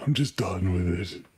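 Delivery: slow, drawn-out, totally fed-up delivery. Imitating how he speaks, just exasperated: imitating Johnny Depp, exasperated. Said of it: "The way he speaks".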